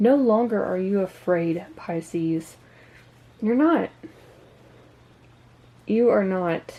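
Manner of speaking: emotional voice on the verge of crying. Reading the reversed Nine of Swords for Pisces: on the verge of tears. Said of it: "I feel like I'm about to cry".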